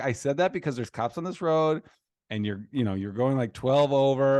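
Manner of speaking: ordinary delivery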